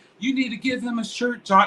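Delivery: tiny, sweet little voice, pitched very high. Retelling what the other speaker's wife said: imitating a sweet little voice. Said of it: "her sweet little voice that she has".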